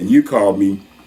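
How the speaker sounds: ordinary delivery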